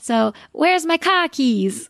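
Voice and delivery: Boston accent, car as ka. Asked by the host to try a Boston accent, a guest gives a sample line. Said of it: "Could you give us a little bit of the Boston accent".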